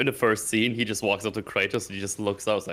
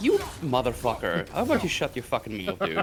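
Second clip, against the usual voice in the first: mock, genuinely enraged-sounding furious rant, high and swooping; 5 semitones higher than usual. Ranting about chat commenters who ask how woke the game is, angry. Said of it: "I'm very angry about this whole".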